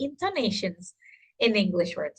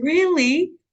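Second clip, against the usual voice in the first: pleasantly surprised, happy, pitched up; 5 semitones higher, 4 dB louder than usual. Showing how tone changes a reply to pregnancy news: happy, surprised. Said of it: "Happy, surprised".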